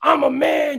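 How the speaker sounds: high, screaming promo-style yell.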